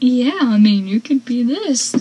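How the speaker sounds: playful put-on jokey tone. Recalling how Mitch answered Pacey, retelling a joking remark. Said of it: "kind of jokingly".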